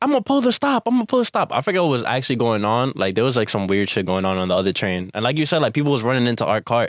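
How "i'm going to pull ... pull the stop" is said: high, mock-frantic woman's voice. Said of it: "she's like".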